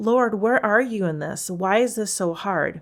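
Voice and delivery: put-on crying out. Recalling being at the limit while making plans, retelling own past crying. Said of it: "at my limit and just crying like".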